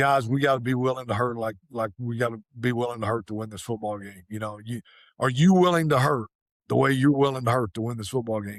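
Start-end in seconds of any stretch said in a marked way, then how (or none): none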